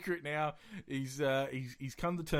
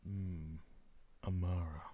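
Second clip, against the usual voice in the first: grand, stately, majestic, savoring intonation; 7 semitones lower, 9 dB quieter than usual. Showing how to say a favourite name: majestic-sounding voice. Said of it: "that sounded really majestic".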